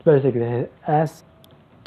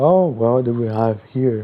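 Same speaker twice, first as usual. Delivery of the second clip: deep, slow, rumbling voice. Retelling the Watcher finding Toga and Davi, in the Watcher's deep voice. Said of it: "in his deep voice".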